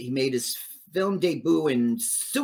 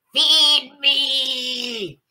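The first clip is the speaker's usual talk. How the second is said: very high, shrill, loud monster voice, drawn-out me; 10 semitones higher, 6 dB louder than usual. Retelling the writer calling out off screen: imitating the writer's plant voice. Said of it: "the writer on set was off screen going".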